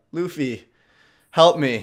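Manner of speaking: mock tearful, put-on crying voice. Retelling the scene where she starts crying and begs for help: retelling Nami crying and pleading. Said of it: "And then she starts crying".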